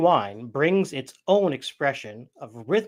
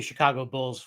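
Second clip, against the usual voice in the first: ordinary delivery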